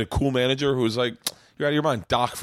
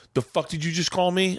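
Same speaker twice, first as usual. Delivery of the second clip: play-acted enraged woman, furious outburst, pitched up; 7 semitones higher than usual. Retelling what an angry audience member shouted: imitating a furious woman. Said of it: "she lost her shit and was like".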